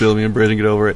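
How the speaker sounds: laughing through the line.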